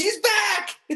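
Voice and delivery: very high, thrilled cry. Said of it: "and he goes".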